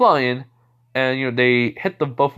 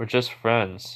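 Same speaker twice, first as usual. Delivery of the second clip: imitated blunt tone, quieter; 4 dB quieter than usual. Retelling a character's answer to classmates: imitating a blunt reply. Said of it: "he just said it very bluntly".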